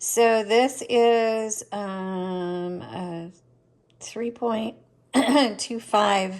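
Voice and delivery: very slow, just-woke-up morning voice. Measuring a spool for viewers, the speaker talks in a morning voice. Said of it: "I've got my morning voice going here".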